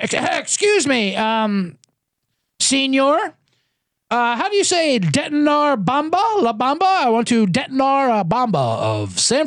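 put-on Irish accent. Talking about a game in mexico, the speaker slips into a fat irish tourist voice. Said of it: "sound more like a fucking fat Irish tourist down in Mexico".

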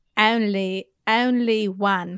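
attempted Essex accent. Repeating a phrase after a teacher's demonstration, trying an Essex accent. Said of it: "I feel like I sound like a wench".

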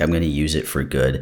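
usual speaking voice

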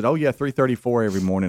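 ordinary talk

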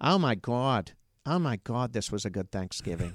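put-on Pittsburgh regional accent. Doing the speaker's mom at Thanksgiving, in a Pittsburgh Yinzer accent. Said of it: "my mom's got that Yinzer accent still".

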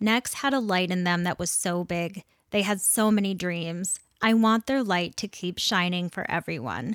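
ordinary talk

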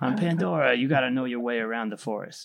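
put-on Queens accent voiceover. Mocking a film's voiceover narration: Jake Sully voiceover with Queens accent. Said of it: "He also has kind of a Queen's accent".

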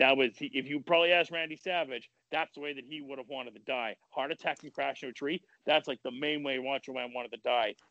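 ordinary delivery

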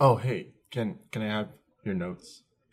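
very softly spoken, hushed and secretive. Retelling how the other girl asked for notes during the test: imitating someone asking very softly. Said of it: "very softly".

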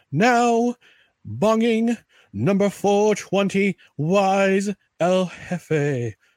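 strong broadcast announcer voice, calling out. Show host greeting listeners by number before a commercial break, in announcer voice. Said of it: "And my best announcer voice".

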